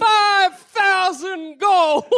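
proud, showy, announcing delivery. Announcing a bounty in a tavern, in character: loud announcement. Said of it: "loudly you announce to the tavern".

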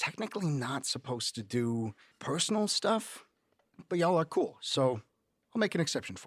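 hushed, secretive, conspiratorial confiding tone. Voicing a man who leans in toward the group: conspiratorial. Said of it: "leans in conspiratorially".

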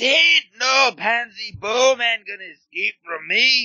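put-on Scottish accent, pitched very high. Host gives a dramatic reading of a Skull Kickers comic panel, Scottish accent. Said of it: "all I could think of was the Scotsman".

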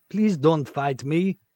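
vague mix of French and Belgian accent. Asked to say it again, repeating the line in a mixed French-Belgian-German accent. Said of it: "It's like a bit French, a bit Belgian, a bit German".

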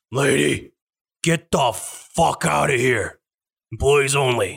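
fed-up, done-with-it half-orc voice. A game master voices a half-orc fast-food employee ordering a customer out, fed up. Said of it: "He's kind of just done working fast food".

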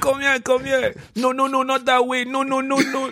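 put-on shrill, high barked yelling in a French accent. Retelling a video of a coach on the sideline: imitating Thierry Henry shouting in French accent. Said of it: "in his French accent".

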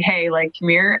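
ordinary talk

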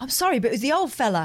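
put-on noticeably cockney London accent. Retelling the other speaker's excuse to a lady: quite cockney accent. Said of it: "you got quite cockney".

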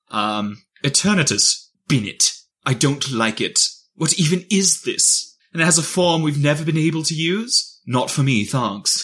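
put-on British accent. Reading out an entry in your bottom five in a British accent. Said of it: "read it in a British accent".

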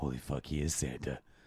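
low, soft voice with shocked realization. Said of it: "she's like".

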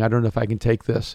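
put-on crying, tearful voice. Retelling what a crying girl said: imitating someone crying. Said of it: "this girl just started crying".

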